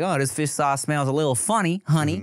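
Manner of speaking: put-on, laid-on Alabama accent. Imagining a girlfriend's family from Mobile, Alabama reacting: imitating an Alabama family member. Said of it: "Her family might be like".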